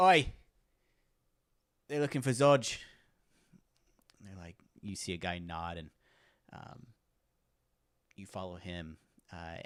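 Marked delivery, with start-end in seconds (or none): 0.0-2.8 very loud, high-pitched shout. Voicing a guard calling to the off-duty guards: guard yelling. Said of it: "And he yells".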